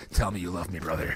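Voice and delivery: put-on eerie, unsettling, creepy voice. Acting out a player staring down an opponent: put-on creepy voice. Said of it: "That's a creepy way to say it".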